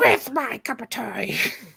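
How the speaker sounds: put-on, high fantasy creature voice. Reading a question aloud to the others: Smeagol impression. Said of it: "That's my Smeagol impression".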